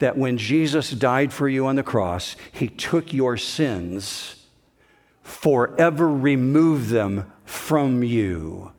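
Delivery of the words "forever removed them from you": forever stressed, drawn out slow and rising. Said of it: "Can I emphasize the word forever?".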